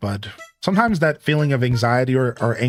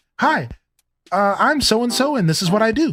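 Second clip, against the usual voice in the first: put-on sudden friendly tone, higher pitch; 10 semitones higher than usual. Retelling the woman turning to the camera with her dog: imitating a sudden nice voice. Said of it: "is all nice".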